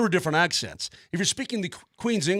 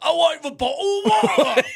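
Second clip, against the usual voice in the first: full-on fake British accent, very high, loud calling; 10 semitones higher, 6 dB louder than usual.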